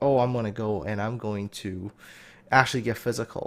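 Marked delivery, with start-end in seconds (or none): none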